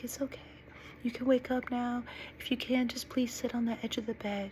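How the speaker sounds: ever so soft, gentle, high, hushed delivery. Retelling what a man said through small bedside speakers on waking, in a really soft voice. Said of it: "ever so soft".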